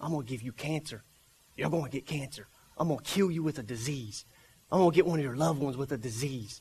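sinister, very low, quiet, menacing half-whisper. Speaking to believers, acting out what the rotten snake half-whispers: imitating a menacing half-whisper. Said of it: "Has he ever said that to you?".

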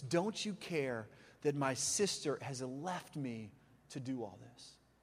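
very low, soft, resentful, bitter grumble, acted. Preacher retells a woman's complaint to Jesus, imitating a bitter complaint. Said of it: "you can hear the bitterness in her voice".

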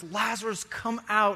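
firm, commanding, proclaiming voice. Retelling a bible story, acting out the call to lazarus: retelling a loud proclamation. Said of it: "in a loud voice, he just proclaims".

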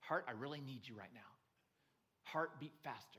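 put-on whisper. Retelling a heart transplant climber's words to her heart: imitating someone whispering. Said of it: "I had to whisper to my heart".

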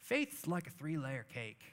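Southern US drawl with swoops. Retelling what a chaplain friend told him about faith, in Neil's Southern drawl. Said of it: "Had a Southern drawl".

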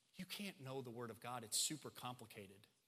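soft, low tempting whisper. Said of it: "he will whisper all kinds of excuses".

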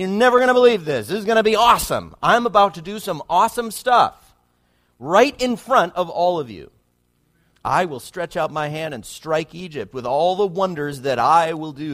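loud, mock thrilled announcing voice with big build-up. Reading God's promise to strike Egypt aloud, acting out God sounding excited. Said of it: "It sounds like he's excited".

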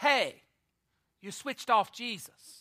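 loud stage whisper. Retelling a shepherd's line in a children's christmas play: imitating a loud stage whisper. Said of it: "said in a loud stage whisper".

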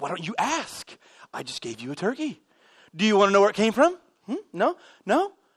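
put-on sarcastic needling with swooping pitch. Retelling own words to people handed a free turkey: retelling a sarcastic remark. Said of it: "as sarcasm".

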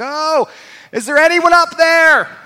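very high, stretched-out hollering call. Telling a story, acting out the stuck man hollering up. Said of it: "he's hollering, he's hollering".

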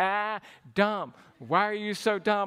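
repetitive, needling, teasing taunt. Retelling how a brother taunted, imitating the brother's taunt. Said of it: "just repeat it".

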